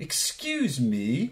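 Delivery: put-on very British accent, laid on. Retelling what a tiny old lady said to kids: very British accent. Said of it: "in a very, very, very British accent".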